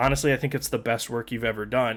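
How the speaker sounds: usual speaking voice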